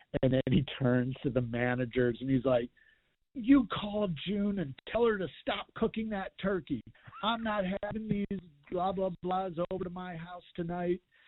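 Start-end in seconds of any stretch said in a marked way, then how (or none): 3.3-10.9 furious, high-pitched, angry yelling. Reporter retelling how a mad coach yelled at the managers: retelling a coach yelling. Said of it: "he's yelling at the team".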